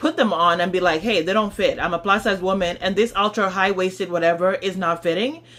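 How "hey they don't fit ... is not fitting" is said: ordinary delivery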